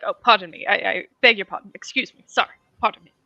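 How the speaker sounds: polite, apologetic halfling voice. Voicing a halfling apologizing as he steps over a dead guy: Mister Gentleman voice. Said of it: "as he crosses over the dead guy, he's like".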